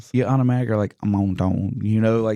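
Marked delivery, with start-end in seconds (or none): 1.0-1.8 put-on French accent. Retelling how students say a French scientist's name: put-on French accent. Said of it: "you're trying to put this French accent".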